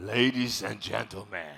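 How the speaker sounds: put-on very low, deep announcer voice. Calling people to the main stage, trying a voice: put-on deep voice. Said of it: "let me try my best, like deep voice".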